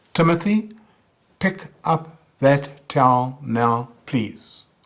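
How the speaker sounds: firm, loud, slow, clipped word-by-word staccato. Demonstrating an assertive command to a child, staccato assertive command. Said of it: "that's staccato voice".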